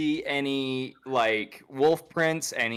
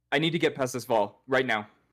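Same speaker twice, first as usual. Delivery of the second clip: very panicked, frantic, panicky voice. A player's character approaching guards at a wall in a role-play game, panicked tone. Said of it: "in a very panicked like tone of voice".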